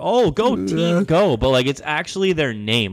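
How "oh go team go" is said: very slow, high, drawn-out clueless cheer. Retelling how someone cheers at games, imitating a clueless team cheer. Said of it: "you sound like some, some person who doesn't know it".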